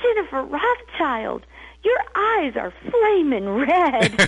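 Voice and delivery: acted sudden alarm. Quoting what her husband said to her at the door, retelling an alarmed voice. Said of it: "with more alarm than I had ever heard in my husband's voice".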